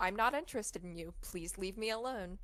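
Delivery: normal talking voice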